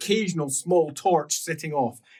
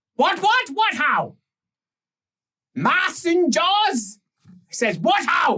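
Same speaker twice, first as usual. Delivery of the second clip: crude put-on rat creature voice, pitched much higher; 12 semitones higher, 3 dB louder than usual. Game master voicing a Skaven slave questioned by the players, dim Skaven ratman voice. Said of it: "Not a sophisticated Skaven".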